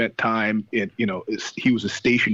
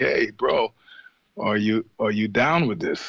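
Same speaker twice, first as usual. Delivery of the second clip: put-on German accent. Speaker recounting what a companion asked before a trip, German accent. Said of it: "he said this all in a German accent".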